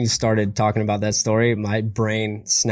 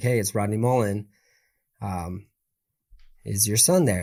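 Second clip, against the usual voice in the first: very calm, understated, low-key voice; 4 dB quieter than usual. Retelling a phone call your dad answered, in Rodney Mullen's calm voice. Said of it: "who has a very calm, like very subtle voice".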